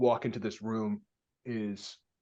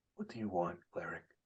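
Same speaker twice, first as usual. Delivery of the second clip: demon character voice, lower and quieter; 5 semitones lower, 8 dB quieter than usual. Voicing a demon who questions a cleric in a bar: demon character voice. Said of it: "he looks back at you, Thrain, and he goes".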